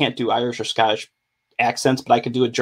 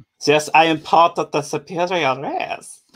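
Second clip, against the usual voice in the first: put-on German accent, higher pitch; 5 semitones higher than usual. Doing his German bit, in a Sprocket-like German accent. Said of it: "That sounded more like Sprocket than Nazi".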